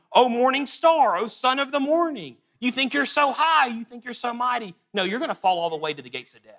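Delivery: high, mocking, scornful, sarcastic taunting tone. Paraphrasing a verse spoken to the king of Babylon: imitating a sarcastic taunt. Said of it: "he's saying it very sarcastically".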